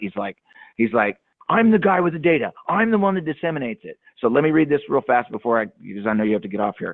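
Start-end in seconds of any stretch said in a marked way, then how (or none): 1.5-4.0 high, pouting mock voice. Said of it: "this guy just pouts and screams".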